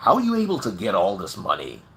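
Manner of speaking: very deep, lilting, put-on American accent. Telling a joke, voicing an American senator questioning a Nigerian man, in an American accent. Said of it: "in his American accent".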